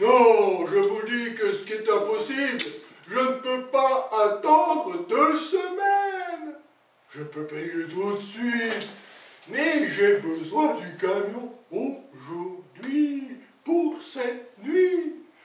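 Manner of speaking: put-on high, insistent, kindly old man voice. Puppet show: Father Christmas answers the salesman, in a Father Christmas voice. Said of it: "[name], / ouvrit la porte à un vieux monsieur qui portait une superbe barbe blanche et sa mine sympathique remplit de joie le vendeur / ouvrit la porte à un vieux monsieur qui portait une superbe barb".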